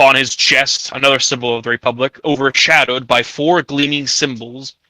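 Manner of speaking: ordinary delivery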